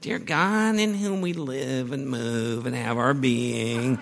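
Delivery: whining preacher voice. Imitating a pastor they knew who used this phrase in prayer, mimicking a whiny prayer voice. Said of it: "the prayer voice was so whiny".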